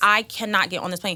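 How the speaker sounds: normal talking voice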